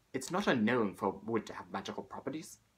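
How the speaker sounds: fairy-tale witch character voice. Explaining a movie theory, quoting the Witch from Brave in a Witch from Brave voice. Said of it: "I pulled off a great witch's voice there".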